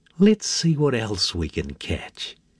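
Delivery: ordinary delivery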